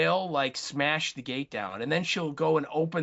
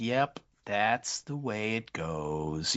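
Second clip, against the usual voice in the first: hushed, very soft, very slow, drawn-out murmur; 6 semitones lower than usual. Retelling a film scene where a character watches a choking: imitating someone speaking softly. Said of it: "really softly saying".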